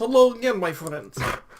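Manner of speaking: put-on Russian accent. Doing an impression of FPS Russia for friends. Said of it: "Today I am F P S Russia".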